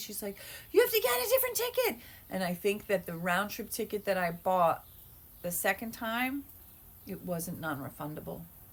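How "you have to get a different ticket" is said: frantic, shrill, very high, rushed angry yelling. Recounting what the woman driving said while yelling at the speaker, imitating her yelling. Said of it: "She's like yelling at me".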